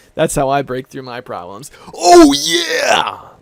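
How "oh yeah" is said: high gravelly mascot bellow, yeah stretched out. Reacting to a viewer comment by doing the Kool-Aid Man 'Oh yeah!'. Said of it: "Like the Kool-Aid Man".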